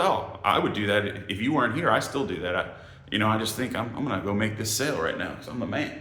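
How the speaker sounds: ordinary talk, nothing marked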